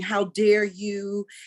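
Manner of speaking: mock-furious angry shouting. Retelling confronting a woman in a store who asked if anyone spoke English, retelling an angry yell. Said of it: "I'm yelling".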